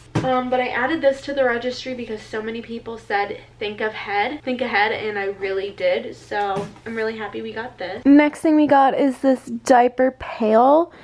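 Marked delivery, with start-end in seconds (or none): none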